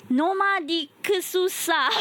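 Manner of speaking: put-on name pronounced with a Japanese accent. Recalling mispronouncing the guest's name, the host says it in a japanese accent. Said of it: "I was pronouncing your name in Japanese accent".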